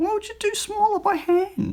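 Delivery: voice jumping up very high in pitch. Asking listeners a question, in a high-pitched voice. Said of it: "I just did that whole high-pitched voice thing".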